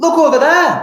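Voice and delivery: very high, loud shouting yell. Showing a class how the boy in the picture shouts: shouting. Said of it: "is shouting".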